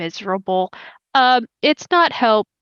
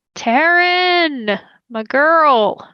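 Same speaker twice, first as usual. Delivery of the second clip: put-on acted drunk, tipsy voice, higher; 6 semitones higher, 3 dB louder than usual. Voicing a former manager calling from a party, a little drunk. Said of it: "sounds like he's at a party, a little drunk".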